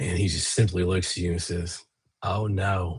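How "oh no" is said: slightly maniacal, unhinged-sounding voice. Voicing a stranger who appears to the player: slightly maniacal voice. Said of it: "he has a slightly maniacal voice".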